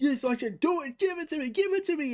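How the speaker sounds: loud, high-pitched taunting yell with a begging tone.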